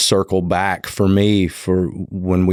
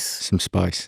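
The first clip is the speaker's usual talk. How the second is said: soft, breathy Australian accent, "space" said as "spice"; 6 dB quieter than usual. Asked to say spice Aussie-style, copying Craig's interview: imitating Craig's Australian accent. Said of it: "You're an Australian all of a sudden".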